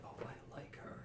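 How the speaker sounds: whispering under breath. Character leaving, looking at another character; whispering to herself. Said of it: "Lucky whispers to herself".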